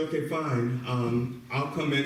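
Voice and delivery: ordinary talk, nothing marked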